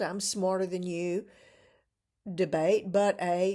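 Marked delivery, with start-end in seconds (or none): none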